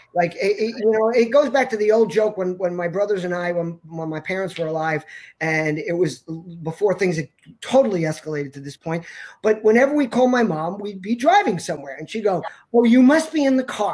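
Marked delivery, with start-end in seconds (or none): 12.7-13.9 raised, needling, belittling tone.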